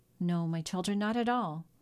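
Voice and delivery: plain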